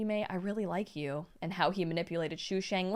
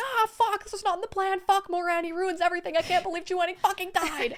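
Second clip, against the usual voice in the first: very high, loud, crazed, frantic freaking-out rant; 13 semitones higher, 7 dB louder than usual. Retelling how two characters react to a death: imitating someone freaking out. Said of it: "So they're going crazy and being like".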